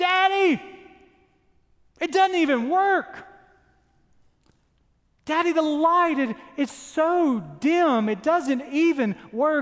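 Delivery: put-on high-pitched small child voice, yelling, complaining tone. Retelling what a five-year-old screams out in his room: imitating a child screaming. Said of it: "and screams out".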